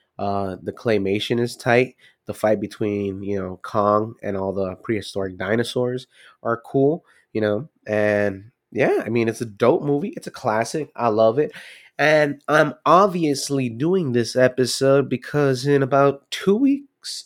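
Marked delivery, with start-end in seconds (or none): 16.3-17.3 voice breaking and cracking partway through. Explaining why he is doing this movie episode, voice cracking. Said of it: "my voice just cracked there".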